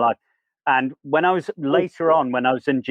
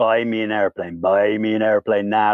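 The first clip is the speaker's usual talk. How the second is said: wasted, sleepless-sounding, out-of-it insistent delivery; 4 semitones lower than usual. Retelling a wandering, off-his-head John demanding at the airport: imitating John off his head. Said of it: "like this".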